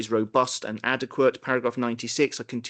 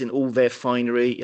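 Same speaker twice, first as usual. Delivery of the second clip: ordinary talk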